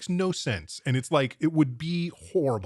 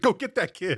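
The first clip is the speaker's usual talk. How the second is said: mock yell, much higher pitch; 5 semitones higher than usual. Retelling how a man yelled across the street to a traffic cop, retelling a yell. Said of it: "he yells to this fat traffic".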